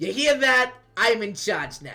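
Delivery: put-on New York Italian accent, loud. Voicing Typhon as he turns towards Delphi, Typhon's New York Italian accent. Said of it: "New York Italian accent".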